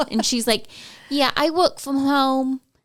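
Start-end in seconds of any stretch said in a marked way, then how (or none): 1.1-2.6 put-on New York accent, pitched up. Imitating a woman interviewed that day, New York accent. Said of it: "like New York accent".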